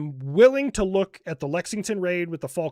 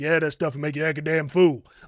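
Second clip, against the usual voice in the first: put-on very deep voice; 3 semitones lower than usual. Retelling a first sergeant's Friday safety brief to soldiers, imitating Sergeant Dunning's deep voice.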